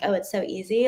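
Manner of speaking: plain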